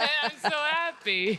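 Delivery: happy words laughed out, very high pitch. Breaking off mid-point about their films to react: laughing.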